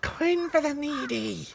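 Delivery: breathy, whisper-like voice. Voicing a woman in rags by the side of the road, whispery voice. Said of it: "you hear a kind of whispery voice".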